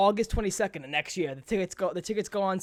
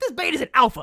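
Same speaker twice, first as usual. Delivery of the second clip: put-on angry voice, higher and louder; 7 semitones higher, 7 dB louder than usual. Imagining an angry guy walking up to someone: imitating an angry guy. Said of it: "imagine an angry guy just".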